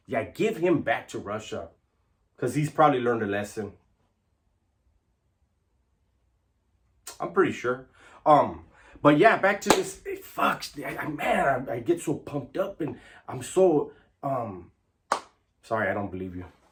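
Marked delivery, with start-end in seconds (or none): 0.1-7.8 heavy, dripping, mocking sarcasm. Ranting to viewers, then adding a sarcastic aside: sarcastic. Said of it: "you guys all see the sarcasm".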